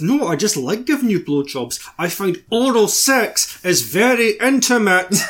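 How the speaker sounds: forced out between clenched teeth. Imagining how the woman would say this to the guy, mock saying through gritted teeth. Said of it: "through gritted teeth?".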